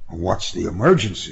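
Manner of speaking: ordinary delivery, nothing marked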